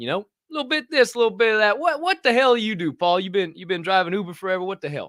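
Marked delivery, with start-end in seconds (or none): 1.8-5.1 put-on drawled, friendly, bantering Southern accent. Retelling a chat with an Uber driver from the South, in a Southern drawl. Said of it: "So my Southern draw came out".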